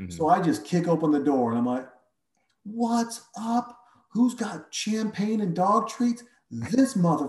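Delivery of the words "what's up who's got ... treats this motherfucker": play-acted high rock-concert holler. Speaker retells kicking open a door and retelling screaming like at a rock concert. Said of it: "And I'm just screaming it".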